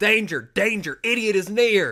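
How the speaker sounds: big booming voice, very high and very loud. Imagining a voice out of nowhere warning someone lighting a Roman candle indoors, big booming voice. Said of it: "you hear a big booming voice".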